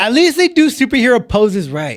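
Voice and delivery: heated, high-pitched, ranting tone. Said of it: "I sound a little heated".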